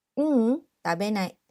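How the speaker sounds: ordinary talk, nothing marked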